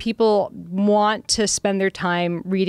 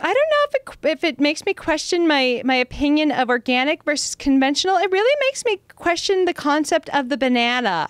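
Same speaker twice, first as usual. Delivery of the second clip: put-on ditzy airhead girl voice, high, sing-song; 8 semitones higher than usual. Retelling what one girl said afterwards, in a dumb girl voice. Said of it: "I like how you do a dumb girl voice".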